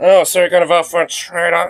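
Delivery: high, feminine-sounding delivery. Retelling what a man in a clip yelled, imitating a feminine delivery. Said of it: "it says it so femininely".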